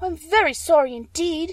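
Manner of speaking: truly frightened, very high and slow voice. Dorothy watches the witch melting before her eyes, frightened. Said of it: "truly frightened".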